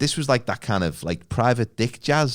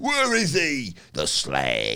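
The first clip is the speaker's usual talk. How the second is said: put-on cockney accent, villain voice. Retelling the villain switching accents: cockney General Zod voice. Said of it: "he just goes all cockney".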